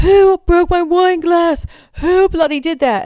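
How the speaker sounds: put-on very high, drawn-out, furious angry scream. Retelling a wedding mishap, imitating Harry screaming. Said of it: "I hear Harry screaming".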